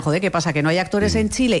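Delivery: ordinary talk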